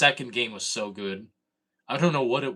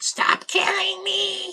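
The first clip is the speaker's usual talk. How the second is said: put-on very high, loud babyish voice; 5 dB louder than usual. Retelling what he said to his dad as a kid, losing a game, baby voice. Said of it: "in a baby voice".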